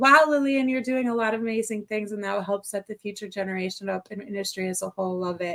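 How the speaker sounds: ordinary talk, nothing marked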